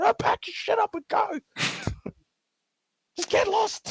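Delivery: put-on fed up, exasperated snap, very high. Acting out a man about to lose it at people playing ping pong, mock-exasperated, losing temper. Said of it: "Like he's about to just say".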